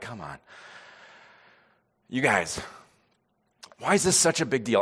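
let-down, angry, scolding father voice. Retelling a rebuke to the disciples, imitating a disappointed dad. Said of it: "like this disappointed dad".

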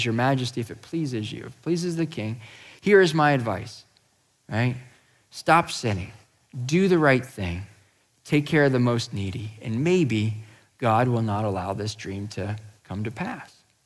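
ordinary delivery

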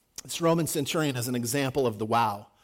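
plain

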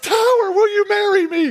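shrill, very high woman's shout, acted out. Retelling a lady yelling from the stands: imitating a lady yelling. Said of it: "Some lady yells".

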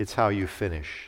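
put-on weak voice. Recounting his father's answer about finishing the race, retelling a very weak voice. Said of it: "in a very weak voice".

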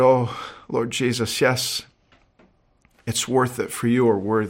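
hushed, half-whispered voice. Retelling a woman's answer after she looked up: imitating a half-whispered prayer. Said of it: "She looked up and whispered".

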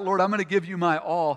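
normal talking voice

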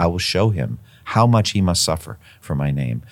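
normal talking voice

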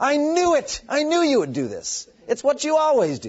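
very high, frustrated, furious rant, swooping in pitch. Reading Jonah's words to God as he said them: great frustrated anger. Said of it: "he said it with great anger. He was really frustrated with God. So read it that way".

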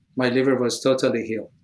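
low, flat, rushed, emotionless monotone. Retelling a man reporting his healed liver, imitating his flat monotone. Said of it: "I'm trying to imitate him... reporting no emotions, monotone, not excited".

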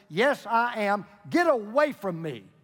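slow, highly annoyed, fed-up, very irritated tone. A man asked whether he is Moses finally answers, very irritated. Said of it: "responded in a very irritated voice".

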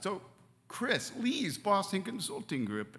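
emotional, choked-up voice. Speaker telling the story of two company founders, getting choked up. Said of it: "I'm getting so choked up".

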